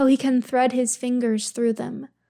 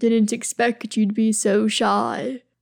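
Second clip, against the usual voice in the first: low, thick rumbling voice. In an intimate scene, a man speaks to his shy partner, low rumble, thick voice. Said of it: "Durin rumbles, voice thick".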